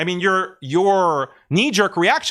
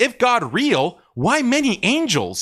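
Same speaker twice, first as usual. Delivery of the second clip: dripping, mocking sarcasm, slow with swooping pitch; 4 semitones higher than usual. Quoting own reply to an atheist's tweet: retelling own sarcastic reply. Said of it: "this sarcastic response".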